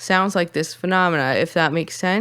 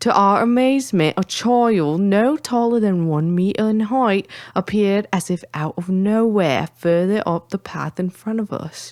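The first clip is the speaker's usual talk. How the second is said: put-on British accent, higher pitched; 3 semitones higher than usual. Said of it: "I'm supposed to say it in a British accent".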